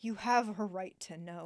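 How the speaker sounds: play-acted tortured, anguished voice wracked with torment. Showing how the narrator Gerard Doyle reads a line: imitating Gerard Doyle's tortured voice. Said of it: "with a tortured voice".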